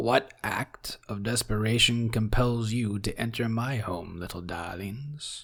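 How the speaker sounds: low, croaky, croaking toad-creature voice. As game master, voice a toad-like creature addressing the party in a low, croaking voice. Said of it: "creature speaks to you in a low, croaking voice".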